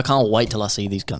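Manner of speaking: plain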